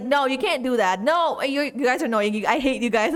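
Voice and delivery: playful, fake annoyed, frustrated tone. Showing how they pretend to react when viewers troll: mock frustrated. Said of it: "I pretend to be like".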